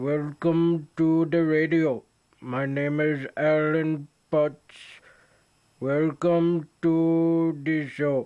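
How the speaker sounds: dull, level, slow radio announcer monotone, stretched. Showing how a hired radio announcer first talked: Alan Potts monotone. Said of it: "do it very monotone. He would talk like this".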